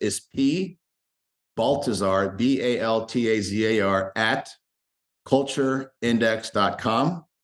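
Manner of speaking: very slow, deliberate, letter-by-letter spelled-out delivery. Giving his name and email address to listeners, saying it very slow. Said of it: "I'll say it very slow".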